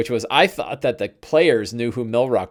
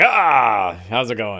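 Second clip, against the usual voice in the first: big, blustery, slow voice with drawn-out "ah". Retelling the head of the ship's greeting: Zardoz Zord voice. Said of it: "he was this big blustery guy".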